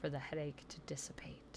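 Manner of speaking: very soft, soothing whisper.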